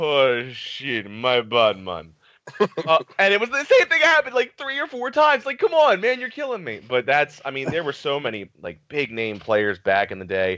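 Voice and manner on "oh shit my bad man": put-on Jamaican accent. Retelling a teammate apologizing for missing the games: imitating Papa Reds, Jamaican accent. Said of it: "he was this Jamaican guy".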